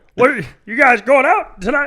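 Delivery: very high, very loud, belted comic voice. Showing an impression he's been trying lately: John C. Reilly voice. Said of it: "I've been trying to do John C. Reilly".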